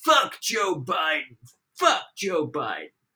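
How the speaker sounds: high, swooping, drawn-out taunting yell. Recounting a man in a pickup truck screaming at him at a stoplight, retelling a scream. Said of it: "somebody screams out to me".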